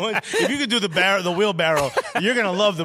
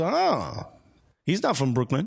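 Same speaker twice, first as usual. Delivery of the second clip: ordinary talk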